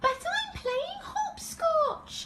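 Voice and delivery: wee, small voice. A narrator reads Baby Bear answering his parents, in his wee tiny voice. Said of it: "in his wee tiny voice".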